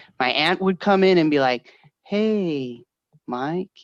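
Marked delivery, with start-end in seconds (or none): 2.1-3.7 laid-back, unhurried, soft, mellow, drawn-out hey. Retelling an aunt arriving to take the kids to school, imitating a really mellow voice. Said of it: "like really mellow".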